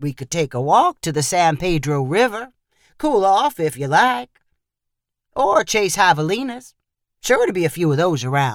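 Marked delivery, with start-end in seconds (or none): none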